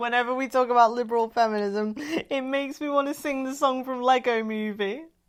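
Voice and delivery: talking through laughter. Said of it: "I'm laughing because".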